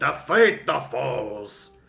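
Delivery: loud, booming god voice. Narrator voicing Orkton inside Helga's head, booming Orkton voice. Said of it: "a booming voice of Orkton just reverberating in her head".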